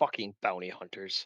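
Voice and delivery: muttering under breath. Voicing an enemy a player just dashed into melee with: grumbling under breath. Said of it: "you hear him grumble under his breath".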